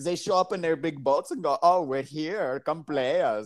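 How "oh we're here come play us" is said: put-on German-accented delivery. Describing the Vikings arriving in their big boats, voicing them in a German accent. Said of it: "that little slick move from the German".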